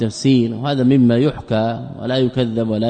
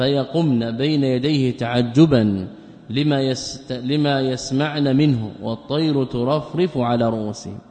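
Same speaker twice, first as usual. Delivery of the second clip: ordinary delivery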